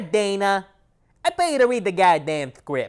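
fake lisping voice. Repeating the boss's line from the scene in a Mike Tyson lisp. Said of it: "a Mike Tyson, Tyson lisp at the end".

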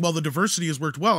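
plain

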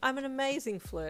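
proud. He answers his partner's cheeky remark about him, proud. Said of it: "Hawks replied proudly".

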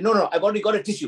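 acted angry, put-out tone. Retelling how she answered when offered a tissue in an exam station, mimicking an angry voice. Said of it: "in the angry voice".

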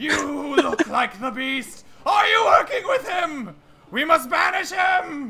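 frantic, very high-pitched, shrill raving shout. A game master voicing a deranged villager who grabs the minotaur: raving deranged villager. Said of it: "Let's flip on over to [name] and to [name] and [name] as you are following this deranged individual back to his house. ... he mutters and raves the whole time".

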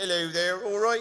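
put-on West Country English accent. Talking about West Country accents, show the audience how one sounds, in a West Country accent. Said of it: "It's one of those great accents".

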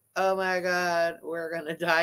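sarcastic, flat, slow, unbothered fake panic. Mocking a clip's line as insincere: mocking flat fake panic. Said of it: "You don't sound too depressed about that".

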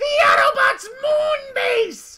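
very high, slow screeching voice.

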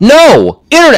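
shrill, loud, exasperated angry yell. Retelling a frustrating call to an automated phone line, retelling yelling at phone menu. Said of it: "You're still screaming".

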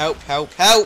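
very loud, frantic, panicked yelling. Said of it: "panicked cry for help in game".

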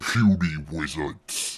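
put-on brute voice. In a game session, stopping to do the Hulk speech. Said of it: "I gotta do the Hulk speech".

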